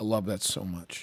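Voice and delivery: normal talking voice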